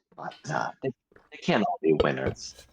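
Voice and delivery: muttered under the breath. Playing a character judging a wine, said so another character won't hear, muttered under the breath. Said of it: "I'll say the second part under my breath".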